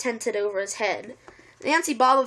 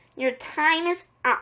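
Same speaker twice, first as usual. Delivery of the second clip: high-pitched hissing voice; 5 semitones higher than usual. Reading a story, voicing a woman confronting the narrator, hissed. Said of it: "she hissed".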